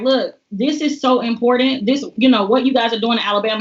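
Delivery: ordinary talk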